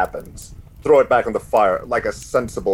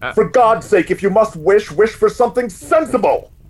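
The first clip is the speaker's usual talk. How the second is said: shouting, higher and louder; 12 semitones higher, 5 dB louder than usual. Warning someone who is about to make a wish: yelling. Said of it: "I apologize for yelling".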